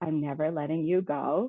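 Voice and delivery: slow, very creepy put-on voice. Saying a line in their creepiest voice, creepy voice. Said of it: "in my creepiest voice".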